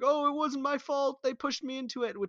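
pleading voice climbing high. Retelling a movie scene, imitating a guy begging.

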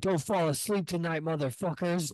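put-on, high-pitched angry little-kid voice. Retelling getting mad as a kid: imitating own childhood deep voice. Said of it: "make my voice real deep".

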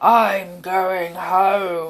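loud, growled monster voice. Narrator reading a story, the Gruffle heading home in the rain, Gruffle growling. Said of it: "he growled".

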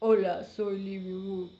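mock deep Korean dub voice. Showing how a character's intro sounds in korean, imitating a much deeper voice. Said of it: "le suena a la voz mucho más grave en coreano".

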